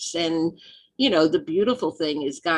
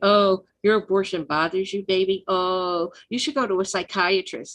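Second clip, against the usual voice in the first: put-on sarcastic, mocking tone. Retelling a woman who confronted her about her abortion: imitating sarcastic woman. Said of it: "of course she was very sarcastic".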